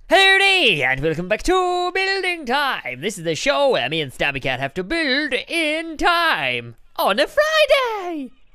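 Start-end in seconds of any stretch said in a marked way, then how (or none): 0.1-3.0 very loud, high-pitched delivery. Opening the show and welcoming everyone back: very loud. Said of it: "you're very loud".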